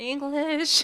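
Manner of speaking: timid mousy voice. Asked what their major was, saying 'English' in a little mousy voice. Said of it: "in a little mousy voice".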